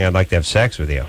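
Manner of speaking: ordinary talk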